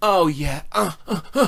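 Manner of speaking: pleasured, drawn-out moans. Imitating a broken doll's voice box: imitating a toy moaning in pleasure. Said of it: "moan in pleasure".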